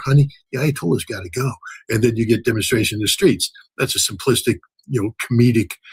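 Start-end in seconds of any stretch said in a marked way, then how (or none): 0.0-1.5 mock, put-on whisper. Acting out a wife speaking to her husband: imitating a wife whispering. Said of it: "the wife whispers in your".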